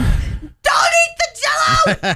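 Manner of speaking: mock screaming. Retelling a panicked dash to the pool line: retelling a scream. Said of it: "I'm screaming".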